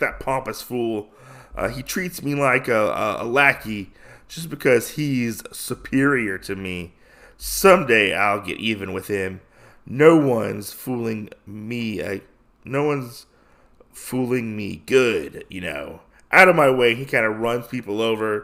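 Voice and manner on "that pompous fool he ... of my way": usual speaking voice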